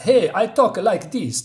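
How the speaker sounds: high fake movie-Russian accent with rolled Rs. Demonstrating how Russians talk in American movies, fake Russian accent. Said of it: "every time I see Russians in American movies".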